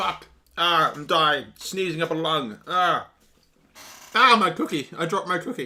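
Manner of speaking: coughing fit, then high, strained voice.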